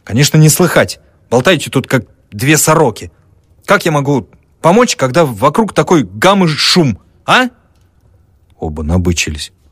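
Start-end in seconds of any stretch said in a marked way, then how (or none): 0.1-7.5 loud, high, irritable, angry scolding tone. A man trying to listen turns on the chattering men, angrily scolding. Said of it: "напустился на мужиков".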